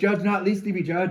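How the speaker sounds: mock enraged, furious yelling scream. Retelling yelling back at people screaming at them, reenacting a furious scream. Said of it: "I screamed and yelled back in their face".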